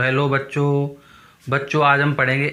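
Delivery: half-dead, listless, lifeless, flat monotone. Showing how not to greet a class: lifeless, half-dead delivery. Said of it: "ये नहीं कि भाई मरे मरे बोल रहे हो".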